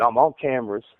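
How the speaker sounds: plain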